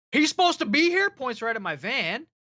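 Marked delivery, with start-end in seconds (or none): 0.1-1.1 mock, loud, pitched-up, worked-up, pissed-off cop voice. Retelling what a cop said at a customer's door, imitating an angry cop. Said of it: "Like all pissed off".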